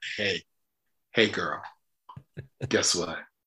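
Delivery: put-on sultry, seductive come-on voice. Imitating another speaker announcing the stream is live: imitating a seductive tone. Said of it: "Very seductively".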